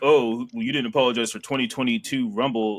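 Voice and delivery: normal talking voice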